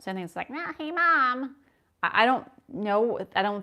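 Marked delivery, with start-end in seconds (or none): 0.5-1.6 very high, squeezed, tight-throated, pinched babbling voice. Imitating his babble now that it has words: high, pinched put-on voice. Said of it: "pitch it up and close my throat a little bit".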